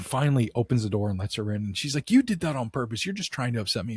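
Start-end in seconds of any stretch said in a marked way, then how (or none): 2.1-4.0 put-on angry, upset voice. Retelling an accusation after the door was opened: imitating someone mad and upset. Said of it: "she was mad and upset".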